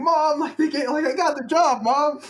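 re-enacted screaming. Recalling telling Mom they got the job, fresh from the shower: retelling screaming. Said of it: "so I was like screaming".

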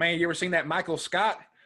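clumsy, high-pitched put-on North Carolina accent. Retelling what his stepdad always says now: Kevin, bad North Carolina accent. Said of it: "really bad North Carolina accent".

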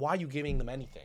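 put-on mocking, jabbing tone. Retelling teasing girlfriend's sister fumbling for money in church, retelling a mocking jab. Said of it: "I'm mocking her".

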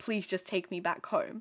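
insistent, begging pleading. Retelling a character's request in a plot summary: imitating someone pleading. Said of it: "begging to the point, pleading".

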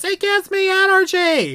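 shrill, very high, drawn-out bellowing yell. Describing a scene from a musical, quoting her reply: retelling a character's yell. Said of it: "and she just yells".

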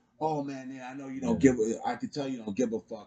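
play-acted aggrieved, upset, irritated complaining voice. Retelling what an upset customer said today: imitating an upset customer. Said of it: "he was upset, and he was like".

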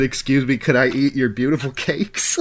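usual speaking voice

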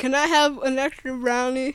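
loud words spoken around a full mouth. Asking for an extra brownie with a mouthful of banana: talking with mouth full. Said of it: "You got a mouthful of banana".

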